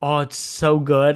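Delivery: very slow delivery, every word stretched out. Retelling a movie scene where an actor bites into candy, imitating James Franco. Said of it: "I love how James Franco".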